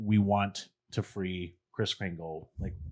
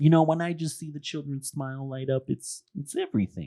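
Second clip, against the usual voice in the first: put-on Brooklyn accent, pitched up; 7 semitones higher than usual. Retelling what a janitor said, imitating the janitor's accent. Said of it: "that accent the whole time".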